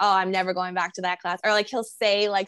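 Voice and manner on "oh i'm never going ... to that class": ordinary talk, nothing marked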